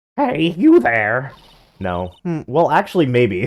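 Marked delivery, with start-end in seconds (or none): 0.2-1.3 put-on high-pitched old woman character voice. Asked to do an old girl voice, the speaker tries it out: old girl voice. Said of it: "Now you want me to do old girl voice".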